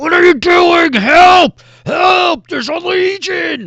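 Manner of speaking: very high, very loud, shrill ogre yelling. Voicing an ogre who calls through a door for help: ogre yelling for help. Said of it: "yelling into, like, the, this door".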